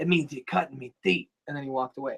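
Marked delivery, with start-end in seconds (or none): 0.0-1.3 creaky, rough-edged, raspy wrestler voice. Retelling a wrestling segment, doing R-Truth's line: R-Truth impression. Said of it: "My Truth is pretty good".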